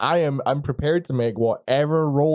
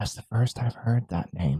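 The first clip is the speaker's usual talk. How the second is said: soft, close, low-key leaning-in whisper; 4 semitones lower, 5 dB quieter than usual. Speaker leans in to reply about hearing a name, whispering. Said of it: "I'm done I'm done whispering".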